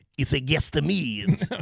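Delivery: terrible put-on French accent. Quoting what a man in a story said, in a terrible french accent. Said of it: "I'm a terrible French accent".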